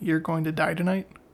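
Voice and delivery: ordinary talk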